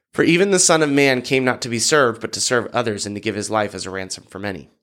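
ordinary delivery

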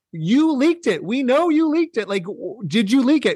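high, pressing accusatory tone. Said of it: "Sutton's like".

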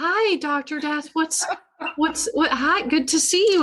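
put-on flustered polite voice. Retelling how the other person greeted her: overwhelmed polite greeting, imitated. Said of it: "she was so polite and like".

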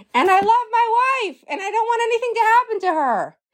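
high, crying, tearful begging, "my" drawn out. Retelling a husband running to the rabbi: imitating a crying plea. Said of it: "he comes running to the rabbi and he's crying".

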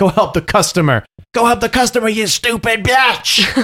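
put-on old man voice, high, angry yell. Retelling how the grandfather tells her to help the customer, imitating a yelling grandfather. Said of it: "the grandfather yells at her".

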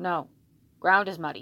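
ordinary delivery

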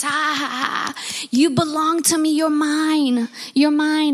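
dreadful, eerie, horrible, creepy voice. Retelling a frightening vision of a voice in a dark room: imitating a horrible voice. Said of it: "This horrible voice".

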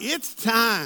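sassy, knowing, attitude-laden delivery. Coaching how to say a line: sassy, with attitude. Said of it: "You need to do it with a little bit of attitude. Like".

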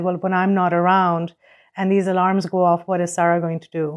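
normal talking voice

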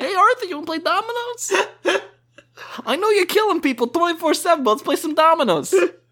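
very high-pitched, insistent, eager, coaxing voice. Complaining she always asks Arthur to play dominoes at camp: imitating Tilly. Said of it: "Every time I go to the camp".

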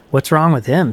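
plain reading voice

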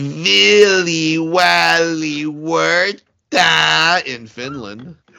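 poor put-on Italian accent. Reading out a list of listeners and their locations, in a really bad italian accent. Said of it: "Sounding like a really bad Italian".

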